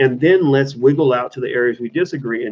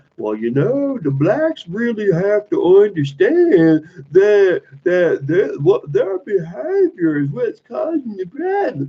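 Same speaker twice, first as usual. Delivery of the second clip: mocking, sneering voice, pitched up high; 6 semitones higher than usual. Mocking the way a Fox News guest talks: mocking Jesse Lee Peterson impression. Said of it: "Jesse Peterson's like".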